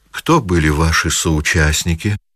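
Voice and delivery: ordinary delivery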